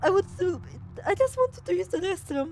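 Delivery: silly, high, squeaky, confused character voice.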